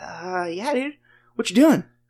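put-on out-of-breath nonchalant tone. Retelling a caller who phoned out of breath but acting casual; imitating someone out of breath. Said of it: "he is just completely out of breath".

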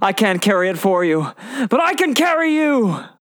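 high, rising, encouraging yell. Retelling a favorite movie scene, a character calling to mr. frodo, retelling a yell. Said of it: "He yells".

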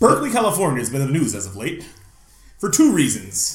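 put-on news anchorman delivery. Host starting a new topic, switching to a put-on news anchorman voice. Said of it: "I'm going to use my Anchorman voice".

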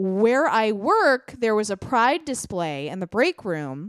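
ordinary talk

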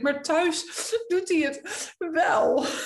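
high, slow, play-acted tearful words through sobs. Speaker retells what they said back to a woman, retelling sobbing words.

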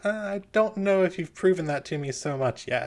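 speaking through a chuckle. Narrating a woman character's reply to a player, laughing while talking. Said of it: "She sort of laughs and goes".

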